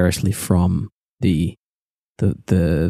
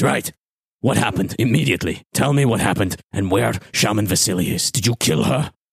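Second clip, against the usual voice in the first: serious, firm, demanding tone; 3 semitones higher than usual. Voicing Chief Homduk demanding to know what happened: Chief Homduk voice. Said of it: "And he steps up to you and he says".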